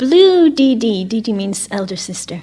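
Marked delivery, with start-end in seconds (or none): 0.0-1.0 put-on little girl shouting out loudly. Retelling a little girl calling out bead colours: imitating a child shouting. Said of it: "she shouts out".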